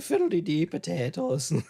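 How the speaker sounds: bad put-on Irish accent. Showing the only accent they can do: bad put-on irish accent. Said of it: "That's the only accent I can do".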